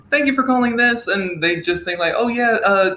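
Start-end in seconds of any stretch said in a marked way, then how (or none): 0.1-1.0 extremely feminine, high, quick customer-service voice. Speaker showing how they answer calls at work; feminine customer service voice. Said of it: "my customer service voice apparently sounds extremely feminine".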